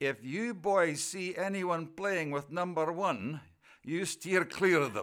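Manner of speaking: put-on Scottish accent. Retelling what a man said after pushing him and his brother into the washroom, Scottish accent. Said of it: "he said in his Scottish accent".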